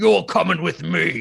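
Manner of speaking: put-on rough, creaky ogre voice. Describing what you'd hear after the city guard, an ogre speaks; ogre voice. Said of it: "you'd hear an ogre's voice saying".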